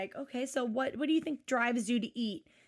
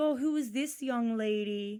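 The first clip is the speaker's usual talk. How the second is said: slow, flirty tone, laying on the charm. Retelling how the doctor flirts with the moms: imitating Doctor Now flirting. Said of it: "Doctor Now flirts with the moms 'cause he's always like".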